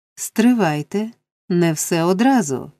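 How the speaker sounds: plain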